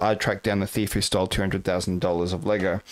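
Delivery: ordinary delivery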